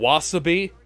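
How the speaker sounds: mock wrong stress on the wrong syllable of wasabi.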